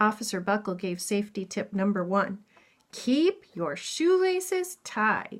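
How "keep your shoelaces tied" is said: each word hit hard, heavy stress throughout. Reading a picture book aloud, a line in capitals: heavy stress on every word. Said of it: "That's why I put emphasis on those words".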